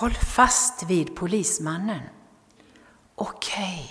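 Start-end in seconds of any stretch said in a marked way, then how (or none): 3.2-3.9 whispered, much quieter. A boy, pulled up to safety, answers his mother's voice, whispering. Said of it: "viskade pojken".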